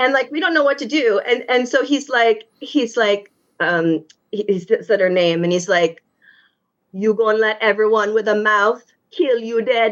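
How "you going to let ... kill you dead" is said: put-on Trinidadian accent. Retelling what a dad from Trinidad said to his daughter: imitating a Trinidadian dad's accent. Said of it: "That's a good impression".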